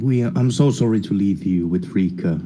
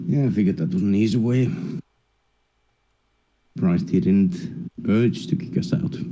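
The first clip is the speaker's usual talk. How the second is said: quiet whispering. Walking away from a man with a companion, speaking in a whisper. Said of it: "I'm just whispering".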